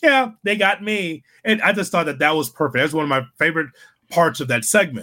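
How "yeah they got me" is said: high, slow, mock chuckling, laughing it off. Retelling a wrestler taking cake to the face: imitating MJF laughing it off. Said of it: "He's just laughed like".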